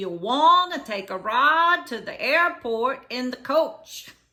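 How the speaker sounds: put-on strong Louisiana accent. Retelling what a man repeated to him, in a very louisiana accent. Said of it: "in a very Louisiana accent".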